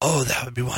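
blissful, whispery enthusiasm. Retelling a text exchange, imitating Scott's reply: Scott voice. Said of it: "that's my Scott voice".

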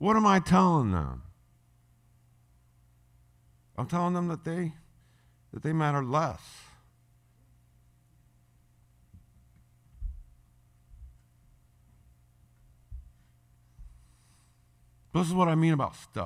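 emotional, choked voice. Telling listeners about a past moment with the kids, choked up. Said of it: "I'm a little choked up here".

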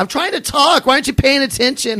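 very high, very loud, shrill shouting. Retelling how she yelled at the speaker for not paying attention, mock-yelling. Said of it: "so she's yelling at me".

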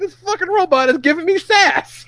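offended, high whining.

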